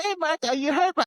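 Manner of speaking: put-on girlish high voice.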